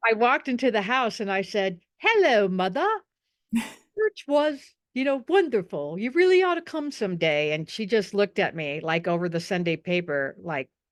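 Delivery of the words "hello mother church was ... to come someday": put-on distinct English accent, pitched up. Retelling walking into the house and greeting mother after church; distinct English accent. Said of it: "a very, um, distinct English accent".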